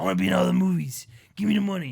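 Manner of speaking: gravelly, creaky voice. Joking about an actor demanding roles: Harrison Ford impression. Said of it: "That's exactly what he sounds like".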